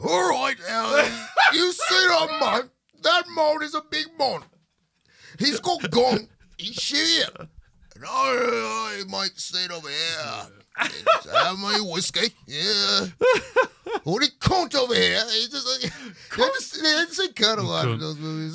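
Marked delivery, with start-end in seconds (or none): 0.1-15.2 slow, swooping gangster talk, "I" stretched out. Doing another requested Tom Hardy impression: Tom Hardy Peaky Blinders impression. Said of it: "Give me the Guy Ritchie".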